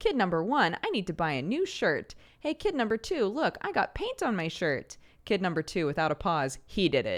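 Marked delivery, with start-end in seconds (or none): 0.0-5.0 goofy, silly, fake-upset voice. Retelling the teacher goofing over paint on a sleeve, in a silly mock-upset voice. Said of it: "pretended to be upset in a silly voice".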